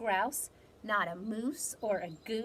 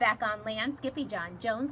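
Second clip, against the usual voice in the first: plain reading voice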